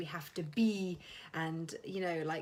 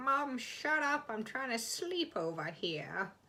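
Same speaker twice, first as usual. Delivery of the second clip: put-on high dog voice, unhurried and drawn-out; 5 semitones higher than usual. Retelling what the dog meant by its noise: voicing the dog. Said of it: "that was my dog just going".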